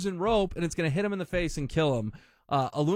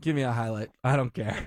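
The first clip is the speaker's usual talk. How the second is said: mock yawning, bored and indifferent; 6 semitones lower than usual. Speaker retelling a TV man answering what to cut from the derby, retelling a yawn. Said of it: "literally yawns".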